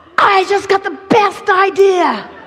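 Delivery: high, loud, thrilled excited burst.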